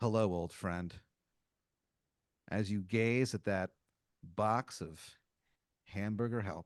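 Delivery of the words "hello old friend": audible muttering under the breath, lower. Acting out greeting a box of hamburger helper: muttered under the breath. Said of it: "under your breath, but definitely loud enough to be heard".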